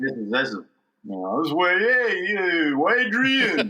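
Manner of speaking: bad, cheesy, swooping Italian voice. Recalling an early character voice: bad Sylvester Stallone imitation. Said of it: "probably what was a bad imitation of Sylvester Stallone".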